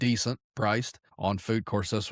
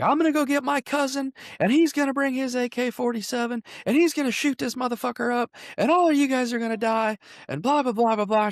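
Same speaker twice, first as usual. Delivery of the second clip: put-on, worked-up, very high, upset ranting; 4 dB louder than usual. Retelling a woman's threat in a bar: imitating an upset woman. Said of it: "she gets all upset".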